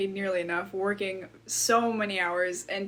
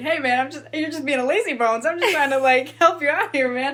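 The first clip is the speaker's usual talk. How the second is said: put-on very loud, high, cheery bubbly tone; 6 semitones higher, 9 dB louder than usual. Retelling how a man confronts people over carts: imitating a bubbly guy. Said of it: "he stays very, like, I guess, like, bubbly".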